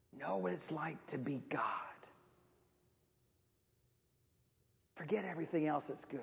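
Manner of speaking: very quiet, low, hushed snake-like hiss. Narrating the Eden story, voicing the serpent telling them to eat, in a hissing serpent voice. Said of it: "he hissed".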